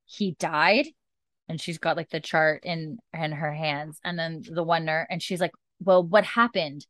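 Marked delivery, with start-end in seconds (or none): 0.2-0.9 mock stunned, shocked disbelief. Retelling a scene where a nurse reads a patient's chart, imitating stunned disbelief. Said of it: "she's just like in disbelief and she goes".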